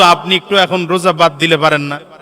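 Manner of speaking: normal talking voice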